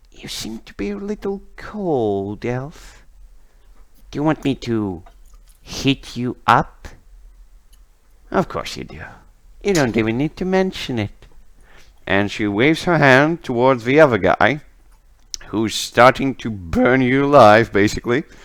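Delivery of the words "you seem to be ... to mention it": soft whisper, close up, face to face. A game narrator voices Lilith kneeling inches from a frozen elf, whispering. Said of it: "and she's whispering".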